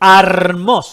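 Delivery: "hermoso" said slowly, loudly and with strong emphasis.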